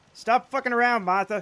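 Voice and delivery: put-on East Coast American accent. Act out a stranger overheard an aisle over at Michael's, imitating an East Coast accent. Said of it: "in an East Coast accent".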